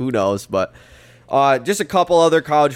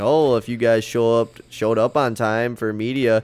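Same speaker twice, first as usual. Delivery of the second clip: slow, snide, mocking, sarcastic snark. Retelling a press conference complaint about the media showing up late, as mock-sarcastic Brian Kelly. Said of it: "being all sarcastic and snarky".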